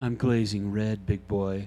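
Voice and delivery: seductive, sultry delivery. Streamer jokes to chat while glazing, sultry voice. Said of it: "I'm using my sultry tone voice".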